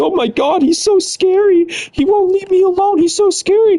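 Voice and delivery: very high, drawn-out, weepy sobbing voice. Retelling how a former friend complained to the police: imitating someone crying. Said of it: "She cries to the police".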